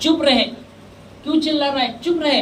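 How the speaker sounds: crowd of voices scolding. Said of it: "कितनों ने उसको डांटा".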